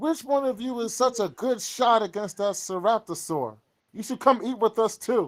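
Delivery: very high, carrying, projected call upward. Voicing Adler, who calls up toward the crenellations, projecting his voice. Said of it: "cups his mouth so he could kind of project his voice".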